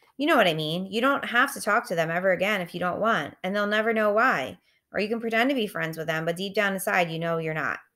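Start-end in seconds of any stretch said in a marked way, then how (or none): none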